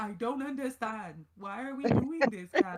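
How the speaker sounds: flat one-note acting voice. Mocking a TV character's dull acting: imitating Tomas's one-note delivery. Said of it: "You one-note fool".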